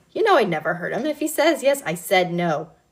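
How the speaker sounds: ordinary delivery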